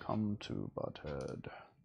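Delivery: goofy voice, dropped low and slow.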